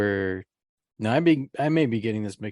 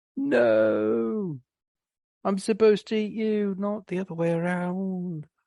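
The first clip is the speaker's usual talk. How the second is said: put-on British accent, pitched way up high; 10 semitones higher than usual. Talking about the film The Blob, a speaker voices the Blob in a British accent. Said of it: "that's the accent that came to mind".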